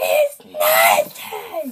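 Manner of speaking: very high, very loud, shrill, swooping scream. Doing a dare from a friend to scream out a line: screaming. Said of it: "I dare you to scream out".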